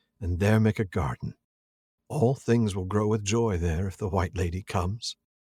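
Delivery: ordinary talk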